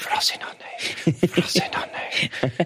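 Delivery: soft, hushed, whispered murmur, to oneself. Speaker recounting drifting off to sleep, acting out a quiet whisper. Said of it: "Whispering it to myself quietly".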